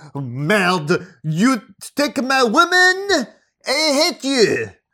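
loud put-on French accent. Retelling a fight between two men dating the same woman, put-on French accent. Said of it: "That's my French accent".

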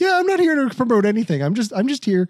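high puppet voice, pointedly polite, peeved, passive-aggressive, fed up. Retelling what Kermit the Frog said on a show: passive-aggressive Kermit the Frog voice. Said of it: "really passive aggressive".

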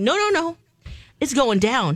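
ordinary delivery

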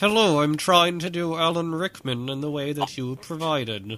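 slow talk through closed teeth. Trying an impression with teeth kept together: Alan Rickman voice. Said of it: "you'll sound a lot more like Alan Rickman".

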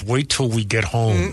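put-on clenched-teeth speech. Recalling his mom grabbing his wrist, imitating her speaking through gritted teeth. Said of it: "she'd say through gritted teeth".

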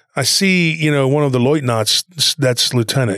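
usual speaking voice

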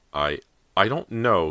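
stammering. Callie answers her mother's question, stammering. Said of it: "Callie stammered".

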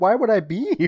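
very high upset outburst. Retelling a scene and acting out a character who is getting upset. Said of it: "Johnny starts getting, uh, upset at this point".

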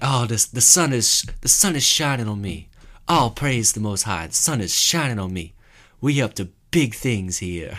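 laid-back, hippie-sounding, self-hyping proclamation. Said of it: "I can't do a [name] impersonation".

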